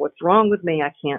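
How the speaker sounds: ordinary delivery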